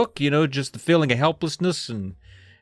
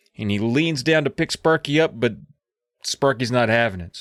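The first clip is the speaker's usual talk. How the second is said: usual speaking voice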